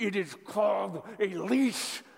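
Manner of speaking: acted gritted-teeth speech. Recalling what he once said to someone; retelling through gritted teeth. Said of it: "through gritted teeth".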